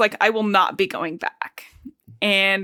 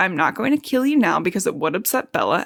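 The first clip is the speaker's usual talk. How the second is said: calm, gentle, unruffled, peaceful and reassuring tone. Retelling a scene where Edward speaks to Jacob: Edward speaking peacefully and gently. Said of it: "very peacefully and gently says".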